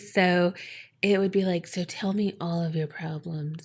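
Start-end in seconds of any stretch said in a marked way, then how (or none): 1.7-3.7 low, hushed, very soft soothing radio-style murmur. Speaker explains why the late-night radio host sounds sexy, doing Delilah's low radio voice. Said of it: "she always had that like low voice".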